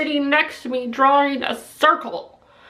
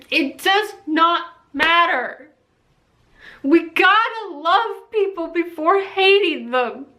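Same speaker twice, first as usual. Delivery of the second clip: crying through the words, tearful. Speaking to video viewers about acceptance, crying while speaking. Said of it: "Sorry that I'm crying".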